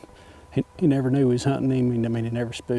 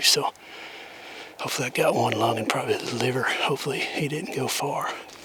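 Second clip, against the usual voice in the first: hushed whisper. Speaker finds blood on the arrow and ground after releasing a shot, whispering.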